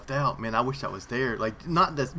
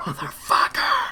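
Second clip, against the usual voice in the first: acted-out whispered yell; 4 semitones higher, 4 dB louder than usual. Retelling own reaction when angry at a PvP game while keeping quiet, retelling a whisper-scream. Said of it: "I'm screaming, but I'm whispering".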